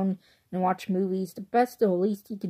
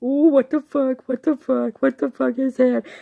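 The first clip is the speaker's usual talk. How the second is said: scared, jumpy, high, loud frightened yelps; 5 semitones higher, 8 dB louder than usual. Describing a man watching a scary movie on TV, imitating someone's scared reaction. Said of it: "I can't scream like him".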